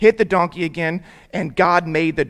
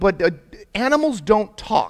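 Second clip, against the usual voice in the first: usual speaking voice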